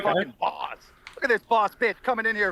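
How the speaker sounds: mad, heated, angry outburst. On the show, reacting to Nick interrupting; angry. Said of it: "you're so mad".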